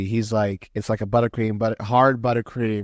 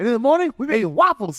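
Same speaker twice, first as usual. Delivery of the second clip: very high-pitched cartoon talking donkey voice; 12 semitones higher, 3 dB louder than usual. Quoting a film after being told the impersonation sounds like Donkey from Shrek: Donkey from Shrek voice. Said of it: "he sounds like Eddie Murphy doing Donkey from Shrek".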